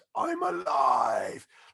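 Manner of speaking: loud, full-throated scream at the top of lungs. Retelling a friend's first ride, imitating him screaming at the top of his voice. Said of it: "he just screamed at the top of, of his voice".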